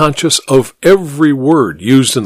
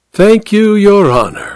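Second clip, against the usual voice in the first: gracious, benevolent, blessing-like, pitched-up tone; 7 semitones higher than usual. An attorney thanks the judge, as if bestowing a blessing on him. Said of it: "with the air of bestowing a blessing on the old bird".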